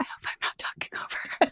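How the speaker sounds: hushed, whispered, under the breath. Retelling a moment of worrying about talking over the co-host: imitating own past whisper. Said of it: "me whispering".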